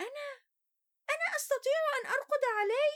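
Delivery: very high, keen, eager voice. A hen replies to a gander, eager. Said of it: "ردت خوخة بلهفة".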